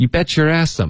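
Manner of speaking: fast, slurred, "you bet your ass em" as one word. Teaching an English phrase said like one word, very fast, run together. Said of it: "这段会说的非常溜，非常快，OK，把它说的像一个字一样".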